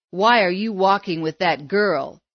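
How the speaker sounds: scornful, derisive sneer. One of five bullies sneers at the boy they have shoved into the dirt. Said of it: "One sneered".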